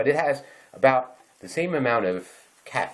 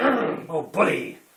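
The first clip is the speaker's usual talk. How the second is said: put-on higher-pitched, gung-ho, old-time cheering; 7 semitones higher than usual. Mocking war-loving bravado by doing a Teddy Roosevelt impression. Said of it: "like Teddy Roosevelt".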